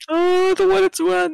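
pretend sadness. Reacting to the show ending, after being told: mock sad voice. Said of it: "you sound very sad".

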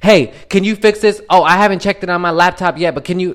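high, carrying call, as if calling far off. Telling how a man yelled to his website developer on speakerphone, retelling a yell across the room. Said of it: "he's yelling to like the person".

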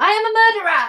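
shrieked very high at full volume. Retelling what someone screamed after a fight: imitating a scream at full volume. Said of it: "screaming at the top of her voice".

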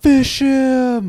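shrill, high, very loud screaming yell. Retelling what a guy screamed while running: retelling a scream.

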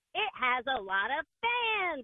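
very deep, dropped-down cartoon voice. Giving the punchline of a joke, in a SpongeBob voice. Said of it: "You can probably do SpongeBob".

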